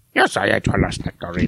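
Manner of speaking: puppet-style little man voice. Reading a quote submitted to the bracket, in Doof's little man voice. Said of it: "He sounds like a Muppet".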